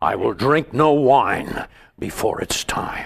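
deep voice pulled up from way down low. Showing the lowest voice done in impressions: Orson Welles impression. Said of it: "you have to do that impression from, from way down deep".

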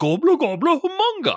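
very high, very loud, shrill, shocked gibberish shrieking yell. Recapping a Muppet scene where a roasting pan goes flying, imitating Swedish Chef yelling. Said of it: "and he just yells out".

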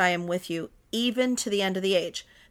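normal talking voice

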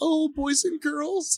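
tiny, very high librarian voice. Speaker mimics a new teacher addressing her class, imitating Kathy's little librarian voice. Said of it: "she's got a little librarian voice".

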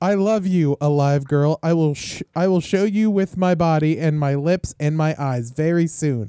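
put-on robotic voice. Acting out what the chair said, in a robot voice. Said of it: "That sounds like a robot".

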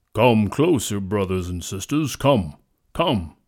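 deep, powerful, commanding lion voice. Narrator voicing the lion calling to the forest creatures, in a deep, powerful voice. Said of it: "a deep, powerful voice said".

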